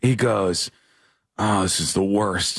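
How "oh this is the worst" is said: put-on exasperated voice, lower. Retelling what a comedian said backstage: imitating Josh Fowler, exasperated. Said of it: "his face is, is red, and he's, like, exasperated".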